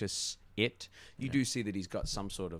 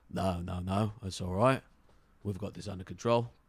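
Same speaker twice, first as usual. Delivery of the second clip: put-on orc voice, louder; 5 dB louder than usual. Running a role-playing game, the game master speaks as the orc, orc voice. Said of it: "the orc slaps a hand on his shoulder, and the orc says".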